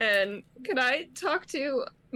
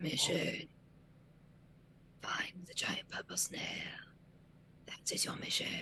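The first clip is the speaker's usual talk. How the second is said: fast, breathy, ominous, spooky whisper; 6 semitones lower, 14 dB quieter than usual. A voice speaks inside a character's head, spooky voice in his head. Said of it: "spooky voices in your heads".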